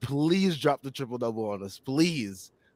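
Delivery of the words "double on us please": ordinary talk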